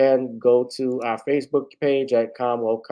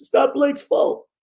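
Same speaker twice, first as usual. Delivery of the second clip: hoarse coach voice, pitched higher; 3 dB louder than usual. Closing a stream while losing the voice: Doc Rivers impression. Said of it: "I'm sounding like the coach from the Clippers".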